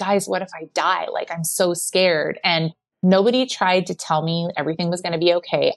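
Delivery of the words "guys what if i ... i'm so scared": mock sobbing, put-on crying, slower. Retelling a moment at the table with everyone, speaker imitates crying while saying it. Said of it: "I just started like crying and saying".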